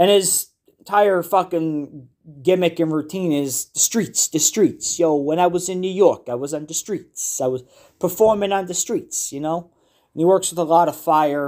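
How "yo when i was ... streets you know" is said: put-on New Jersey-accented casual street-style talk. Imitating a fire performer's street routine, in a jersey accent. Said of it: "He's got the Jersey accent".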